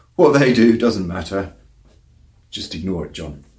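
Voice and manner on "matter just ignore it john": ordinary talk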